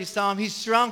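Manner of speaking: normal talking voice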